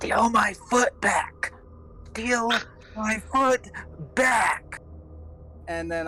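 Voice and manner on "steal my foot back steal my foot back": slow, high, hushed whisper under the breath. In a role-play game, a character whispers while walking past a companion, whispering. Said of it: "I'm going to whisper".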